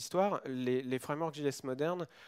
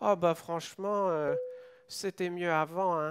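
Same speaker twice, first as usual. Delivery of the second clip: put-on loud little old man character voice; 4 semitones higher, 5 dB louder than usual. Voicing the imagined little voice in the speaker's head, a little old boomer voice. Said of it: "une petite voix de petit vieux boomer".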